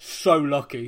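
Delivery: lone, loud, miserable grumbling voice. Retelling a lone fan's remark after a goal: imitating a miserable git's voice. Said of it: "miserable git voice go".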